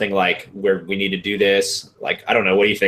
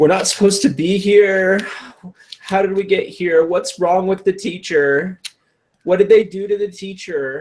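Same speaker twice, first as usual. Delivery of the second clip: very high, loud, wailing, sobbing speech; 12 semitones higher than usual. Voicing a character in a game scene while loud crying. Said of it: "loudly crying, like, not, not quietly crying".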